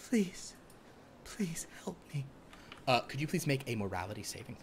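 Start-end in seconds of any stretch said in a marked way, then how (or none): 0.1-2.2 tearful, crying, pleading gnome voice. Voicing a small gnome woman with tears welling in her eyes: tearful pleading gnome. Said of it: "tears welling in her eyes, she just goes".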